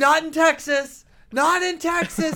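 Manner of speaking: very high, slow, drawn-out furious angry yelling. Retelling how an intern burst out about the eclipse: imitating someone yelling. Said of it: "He's, like, yelling".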